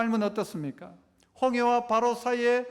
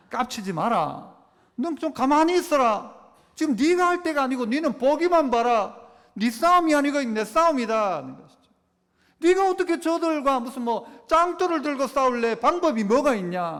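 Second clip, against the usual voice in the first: speaking in Gyeongsang dialect; 4 dB louder than usual. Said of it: "경상도 말로".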